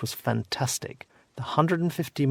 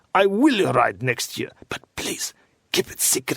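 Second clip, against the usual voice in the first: put-on barked out in a thick Russian accent. Retelling someone's promise to ride next year: barked in a thick Russian accent. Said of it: "he barked in his thick Russian accent".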